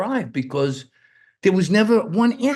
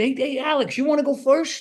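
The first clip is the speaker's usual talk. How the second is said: high-pitched voice, rising even higher; 7 semitones higher than usual. Retelling own past line to a partner, imitating own voice going up in pitch. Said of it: "my voice went up when I said it".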